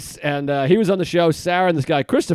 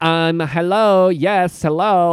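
mock, put-on American accent. Retelling how a host introduced them on stage: imitating a put-on American accent. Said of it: "it does, like, an American voice".

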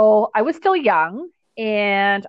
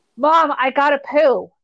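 acted yelling, higher; 6 semitones higher than usual. Retelling a swim meet, yelling up to mom in the stands from the block. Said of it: "to yell to my mom".

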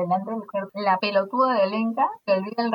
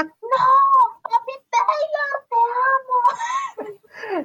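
mock scream, higher and louder; 4 dB louder than usual. Retelling a concert where a friend yelled at the guitarist: imitating a friend screaming. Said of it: "mi amiga empieza a gritar".

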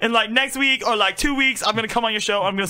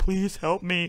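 put-on, weepy, tearful begging; 4 semitones lower, 5 dB quieter than usual. Retelling a video where a fighter with fake tears begs: imitating a fake crying plea. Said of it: "fake tears on his face".

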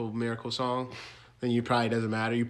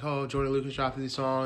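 ordinary talk, nothing marked

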